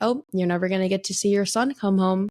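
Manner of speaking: ordinary talk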